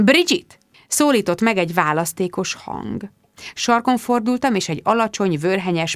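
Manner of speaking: plain reading voice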